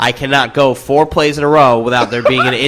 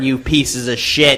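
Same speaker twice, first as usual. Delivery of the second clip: severe, very stern, strict, no-nonsense tone. Listing things the listeners need to fix right now: very stern voice. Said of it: "in this voice that's going to be very stern".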